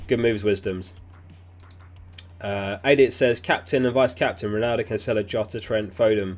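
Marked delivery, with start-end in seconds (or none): none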